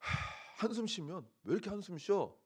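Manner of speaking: sighing, nagging delivery.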